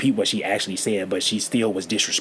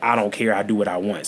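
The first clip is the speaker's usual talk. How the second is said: usual speaking voice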